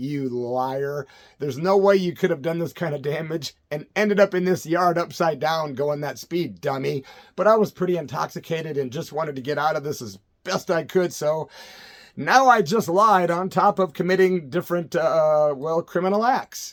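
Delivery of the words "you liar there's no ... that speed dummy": ordinary delivery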